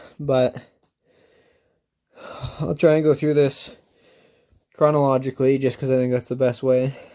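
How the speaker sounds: a little breathless. Recording a late-night update after lifting weights, a bit out of breath. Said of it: "I'm a bit out of breath".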